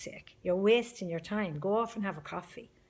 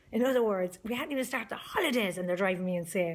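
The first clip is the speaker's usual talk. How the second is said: ordinary talk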